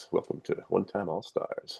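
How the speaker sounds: breathy, hushed, throaty late-night radio DJ voice. The host welcomes listeners to the show in his after-hours voice. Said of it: "my after hours voice".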